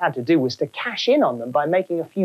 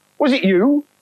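wary, distrustful, suspicious, pitched up; 6 semitones higher, 3 dB louder than usual. A ghost asks the man it has just run into, asking suspiciously. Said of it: "It asked suspiciously".

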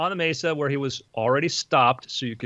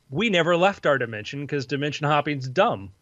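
plain

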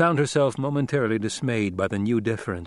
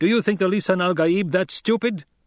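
angry shout, raised high, hurled out; 8 semitones higher than usual. Narrator reads Paul hurling his words at the troops, angry raised voice. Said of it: "hurled his voice at them in anger".

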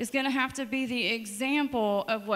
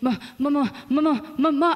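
put-on excited child voice, stuttering, higher and louder; 3 semitones higher, 6 dB louder than usual. Retelling how her son called out when little: imitating an excited child stuttering. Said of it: "he would get really excited and he would like".

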